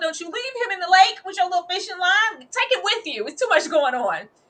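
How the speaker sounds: high-pitched hollering. Retelling own reaction to a lake scene: imitating own yelling. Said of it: "I was yelling".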